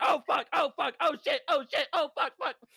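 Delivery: frantic, very high, panicked shrieking. Recounting how loudly they screamed, the speaker acts out screamed swearing. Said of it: "I screamed so loud".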